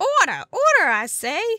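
put-on southern-accented voice. Voicing the judge calling the court to order: Southern accent. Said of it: "I got Southern there for a minute".

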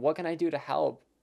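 put-on begging voice. Recalling mom breaking down on a walk, retelling an almost begging plea. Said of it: "in this almost begging voice".

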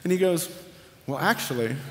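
ordinary talk

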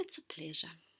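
very low, hushed, soft murmur. A doctor watches his patient swim off and speaks to himself; softly. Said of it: "he said softly to himself".

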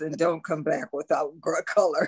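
put-on muttering under the breath. Retelling what the pastor said while sweeping: imitating a mutter under breath. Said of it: "under his breath".

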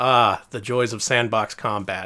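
acted, completely flat, slow deadpan monotone. Quoting a flat line from a video: imitating a flat delivery. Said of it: "completely flatly said".

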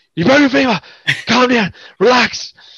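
put-on almost American accent. Retelling a doctor's reply after checking his leg, almost American accent. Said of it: "he spoke really like almost American accent".

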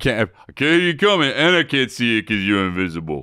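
low, dropped put-on voice acting deaf. Riffing on a Sylvester Stallone character who is deaf: Sylvester Stallone impression. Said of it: "Good impression".

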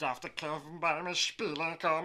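low cat character voice. Showing off cat imitations, doing the Ohren-Augen-Katze voice. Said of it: "Ich kann auch die Katzen nachmachen".

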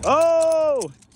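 sudden, very high, loud oh.

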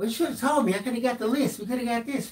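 high, scolding nagging voice. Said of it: "Of course, I had to hear".

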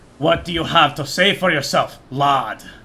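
put-on old, elderly dwarf wizard voice. Game master voicing an old dwarf wizard confronting Keran, old dwarf wizard voice. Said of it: "As a old dwarf with a long gray beard steps onto the balcony. / As a old dwarf with a long gray beard steps onto the balcony. Oi, what the fuck do you expect to do in my home? / As a old dwarf with a".

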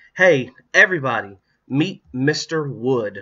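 cheerful, happy, loud declaring tone. Holding up the dummy in the kitchen, she introduces it to everybody, declaring happily. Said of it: "she declared happily".

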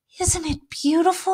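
breathed out on a sigh. Susie, looking at Notre Dame lit up at night, sighing. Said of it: "sighed Susie".

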